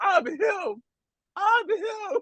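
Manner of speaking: very high, very slow drawn-out scream. Retelling what a player screamed twice during the game: imitating Austin Reeves screaming. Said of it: "he screamed it twice".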